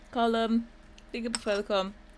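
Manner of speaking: speaking with mouth full of food. Answering a question about columns, talking with mouth full. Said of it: "it's my last mouthful of mozzarella".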